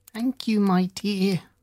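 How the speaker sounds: put-on weak, feeble, croaking old woman's voice. Narrator reads an old woman thanking the one who invites her in, feeble, croaking voice. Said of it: "said the old woman in a feeble, croaking voice".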